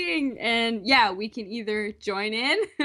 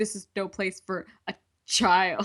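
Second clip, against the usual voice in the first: acted-out, dripping with extreme venom, spiteful; 3 semitones lower than usual. Retelling how a character said a line about a child: imitating extreme venom. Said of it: "She said it with, like, extreme venom".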